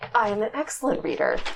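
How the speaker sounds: affronted, indignant, offended character voice. Voicing a character whose reading is questioned: in character, sounding offended. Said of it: "She sounds actually kind of offended".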